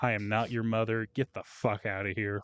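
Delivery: put-on sassy tone. Retelling a coworker refusing to baby someone: imitating a sassy retort. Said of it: "level of sass".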